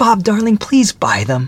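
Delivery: keen, coaxing. A woman turns to her fiancé, eagerly. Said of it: "She added eagerly".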